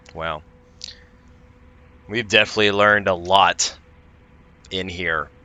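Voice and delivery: extremely heavy, dripping sarcasm. Answering in character after learning nothing: as sarcastic as possible. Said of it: "I say that as sarcastically as possible".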